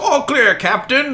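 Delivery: very high, loud put-on sailor call. Voicing a character reporting to the captain: sailor voice. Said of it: "his best sailor voice says".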